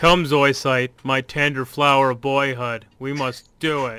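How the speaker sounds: put-on very deep, loud, booming voice. Reading a script line while doing Zoisite, deep Zoisite voice. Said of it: "I'll do a really deep voice".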